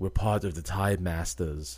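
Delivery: horrible, clumsy put-on English accent. Describing a TV show, the speaker quotes Rip Hunter in a horrible English accent. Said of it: "horrible English accent".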